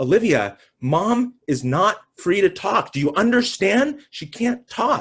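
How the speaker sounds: acted furious yelling, high and rising. Speaker retells holding on to her and yelling at her: reenacting angry yelling. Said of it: "I'm yelling at her".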